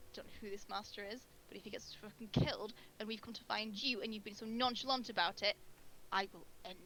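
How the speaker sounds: pointed, deliberately audible muttered aside. A player's character pulls another character close by the cloak, muttered under breath. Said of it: "under my breath so you can hear it".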